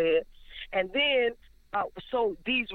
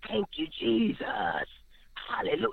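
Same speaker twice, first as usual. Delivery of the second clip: gross, disgusting demonic voice with swooping pitch. Speaker retelling what a woman said, in a gross demonic voice. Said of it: "she says with a gross voice".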